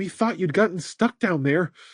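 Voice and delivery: trembling, shaky, unsteady delivery. Alice greets him after he climbs the hill, in a shaky voice. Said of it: "she said in a shaky voice".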